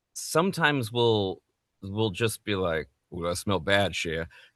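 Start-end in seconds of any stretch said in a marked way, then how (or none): 3.1-4.2 put-on Cajun accent. Telling how they talk with their partner, saying their phrase in Gambit's Cajun accent. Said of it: "accidentally saying in the Cajun accent".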